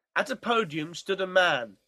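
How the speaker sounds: ordinary delivery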